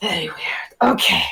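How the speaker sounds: hushed, awed whisper, muttered under the breath.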